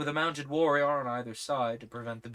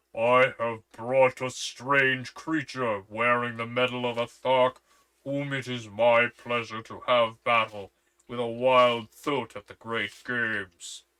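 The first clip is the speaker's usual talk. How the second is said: loud, threatening, ominous and menacing voice; 6 dB louder than usual. A narrator reads a captor pushing his prisoner before the ruler, loud and menacing. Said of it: "in a loud and menacing voice".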